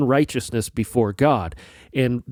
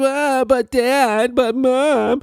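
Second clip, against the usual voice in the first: put-on very high, very slow, drawn-out, pouty child whine; 12 semitones higher than usual. Parent explaining the no-whining rule, imitating a whining child. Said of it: "use that tone of voice".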